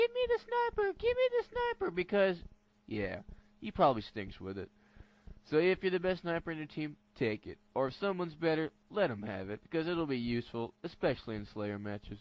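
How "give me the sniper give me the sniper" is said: very high-pitched mock little kid yelling. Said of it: "the little kid yelling".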